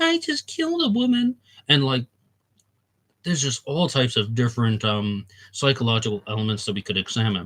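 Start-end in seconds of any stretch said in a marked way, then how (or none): 0.0-1.4 pitched way up, effeminate-sounding voice. Discussing serial killers' phone calls, the speaker does a Weepy Voice Killer voice. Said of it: "talk in this very high pitched, effeminate voice".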